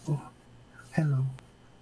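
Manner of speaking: gentle, high, ghostly spectral voice. Narrator voicing a ghost greeting the listeners, in a soft ghostly voice. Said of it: "you can kind of hear a soft voice".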